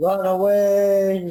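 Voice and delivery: comic, panicked, high, loud, drawn-out shout.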